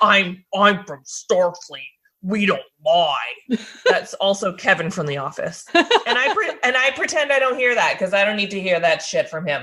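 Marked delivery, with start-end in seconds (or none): 0.0-3.6 put-on, forced deep, lowered, slow voice. Retelling Wesley's famous quote to the mediators, in a forced lower voice. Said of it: "in a forced lower tone voice".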